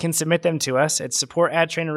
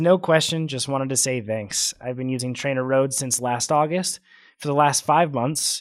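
ordinary talk

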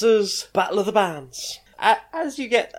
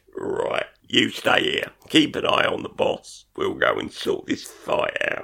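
rough, creaky creature voice; 10 semitones lower than usual. Game master voicing a bullywug squaring up to the players: bullywug guard voice. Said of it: "the bullywugs start trying to square you up".

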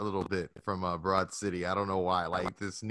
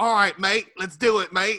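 belted, very loud, high-pitched fake Australian accent; 12 semitones higher, 10 dB louder than usual. Retelling what Bayley says while double teaming: imitating Bayley's fake Australian accent. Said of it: "clearly Bayley's not Australian".

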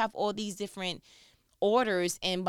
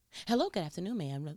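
put-on polished, professional phone voice; 3 semitones lower, 3 dB quieter than usual. Imitating someone answering the phone at their job: imitating a work phone voice. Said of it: "that's your work voice".

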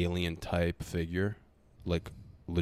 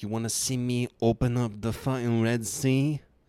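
put-on high, slow, deaf-sounding voice with Romanian accent; 6 semitones higher, 4 dB louder than usual. Quoting what a guy said, sounding like a deaf Romanian dude. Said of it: "Why does he sound like a deaf Romanian dude?".

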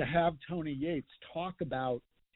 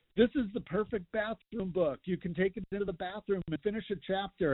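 mild hawking call, calling out like a yell; 6 semitones higher than usual. Author recalling a man at a book signing in a mall, retelling a yell. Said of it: "He's yelling".

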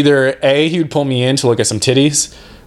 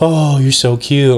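mock baby-talk voice, cooing and childlike. Retelling how people took turns talking to a couple's baby: retelling baby talk.

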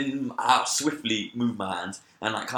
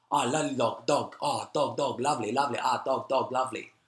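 put-on foreign accent, much slower. Speaker retells people they met talking to them; imitating non-americans' accent. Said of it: "I'm gonna impersonate their accent".

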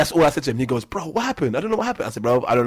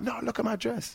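acted tearful voice, higher and quieter; 11 semitones higher, 10 dB quieter than usual. Retelling how a girl came up crying about her dress: imitating someone crying. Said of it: "she come up to me all crying".

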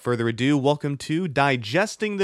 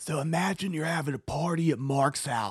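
whispering, much quieter; 6 dB quieter than usual. Speaker told not to yell restarts explaining bond hearings to a questioner, whispering. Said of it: "You don't have to whisper either".

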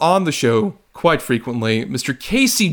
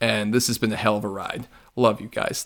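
ordinary talk, nothing marked

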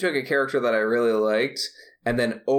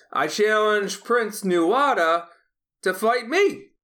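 uncomfortable put-on hero voice, yelling, rising and pitched-up; 9 semitones higher than usual. Retelling the yell at the end of Hellboy two: imitating Ron Perlman yelling. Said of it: "When Ron Perlman yells".

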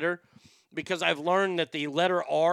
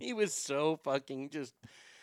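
ordinary delivery

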